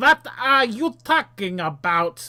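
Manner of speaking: put-on thick Austrian accent. Game narrator voicing a giant who answers the players, in a heavy Austrian accent. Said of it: "The giant says in a heavy Australian accent".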